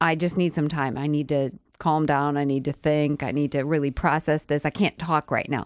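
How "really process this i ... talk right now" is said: ordinary talk, nothing marked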